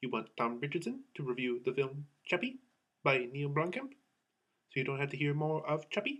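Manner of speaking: soft little robot voice. A movie reviewer introduces his Chappie review in the Chappie robot voice. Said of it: "that was my Charlton Copley um, impression".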